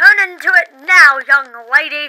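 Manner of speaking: loud yelling. Playing a dad ordering his daughter into her deer form: yelling. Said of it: "You don't have to yell at me".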